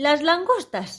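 enthusiastic, eager, excited, high exclamation. The Gryphon cuts in as the Mock Turtle describes the lobster dance: exclaimed enthusiastically. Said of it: "exclamó el grifo con entusiasmo".

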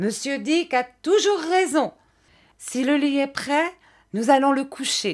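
high, triumphant exclamation full of satisfaction. The narrator's aunt calls to Jeannette, with triumphant satisfaction. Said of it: "s'écria ma tante avec l'expression de satisfaction triomphante".

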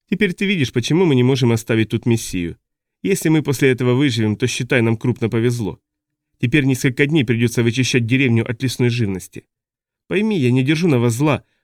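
plain

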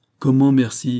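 crying out. Reading a story, a captain responds to being thanked, exclaiming. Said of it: "s'écria Hod".

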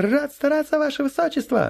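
very high, joyful squawking yelp, blurted. Reading a story aloud, a newly promoted corporal answers his highness with a joyful blurt. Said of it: "радостно вякнул новоиспеченный шнурок".

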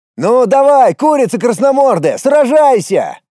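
very high, shrill, challenging shout. The narrator, facing a dragon he must fight, shouts at it; shouted. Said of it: "крикнул я дракону".

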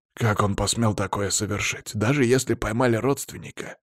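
plain reading voice

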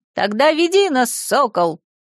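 lofty, grand, proclaiming tone. Among a group of travelers, one companion speaks up, proclaiming. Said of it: "провозгласил Колобок".

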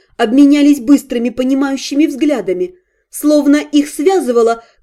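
ordinary delivery

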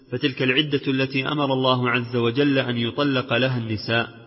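ordinary talk, nothing marked

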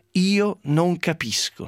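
shaky, trembling, wavering and quavering voice. Retelling a newspaper interview, act out Guzzanti's first words on the phone, imitating a trembling voice. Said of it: "inizia con voce tremante la Guzzanti".

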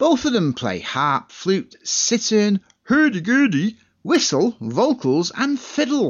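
put-on Swedish chef accent throughout. Listing the two musicians' instruments on a CD, in a Swedish Chef voice. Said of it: "I feel like I'm being like a Swedish chef".

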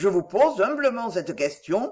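plain

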